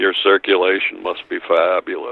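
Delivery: dry deadpan delivery. Speaker quotes one man's remark to another, retelling a deadpan line.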